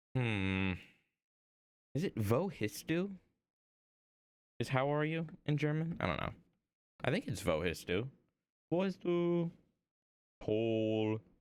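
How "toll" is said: deadpan, flat delivery with zero excitement. Trying out German words and answering with the German toll: unenthusiastic toll. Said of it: "Saying toll in the most not great manner".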